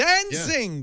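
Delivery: put-on shouting. Imitating a train passenger who yelled into her phone: imitating a woman yelling on phone. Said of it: "it was literally just like that".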